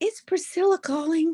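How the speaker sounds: high, wispy little voice. Retelling how a famous client sounded on the phone: imitating Priscilla Presley's soft wispy voice. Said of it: "in her little soft, uh, ra-, wispy voice".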